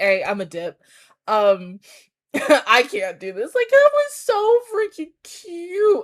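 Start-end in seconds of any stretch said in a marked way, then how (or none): 0.0-3.5 all flustered, thrown and awkward. Retelling how a character reacted at a meeting: imitating a flustered character. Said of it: "he got, like, flustered".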